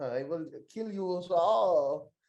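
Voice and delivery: put-on German accent. Imagining a wrestler as a movie villain: put-on German accent. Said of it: "I want him to talk like that".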